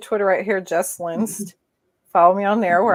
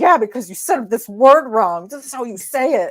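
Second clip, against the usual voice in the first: loud yell. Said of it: "Jessica's yelling at me".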